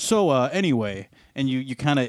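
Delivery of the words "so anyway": default segueing, change-of-subject intonation on anyway. Teasing the other speaker about changing topics: imitating Jamie's segueing tone. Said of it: "the intonation in your voice kinda, like, defaults, and you go".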